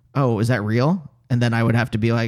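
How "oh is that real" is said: ordinary talk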